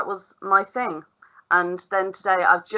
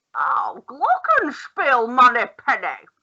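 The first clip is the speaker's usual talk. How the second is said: very slow, dragged-out, widely swooping drawl; 5 semitones higher than usual. Asked to say words like Sean Connery, give a Sean Connery impression. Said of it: "say it like Sean Connery?".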